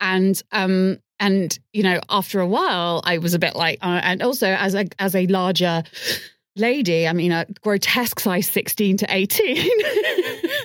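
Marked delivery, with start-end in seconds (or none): 7.3-9.7 sarcastic, with a laugh. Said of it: "That's me being sarcastic".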